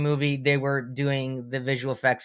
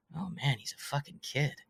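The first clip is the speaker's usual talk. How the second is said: muttered under breath, much quieter; 12 dB quieter than usual. Retelling what a man said on first meeting the speaker, retelling a mutter under breath. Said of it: "kind of under his breath he goes".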